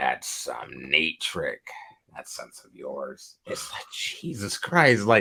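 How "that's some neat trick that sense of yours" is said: whispered, breathy villain voice. Retelling a movie scene, quoting the Green Goblin: Green Goblin voice. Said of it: "he's turning into, like, Goblin".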